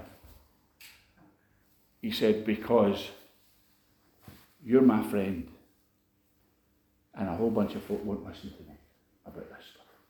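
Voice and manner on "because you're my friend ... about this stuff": low, soft voice, fighting back tears. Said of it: "I'm trying to say it without crying".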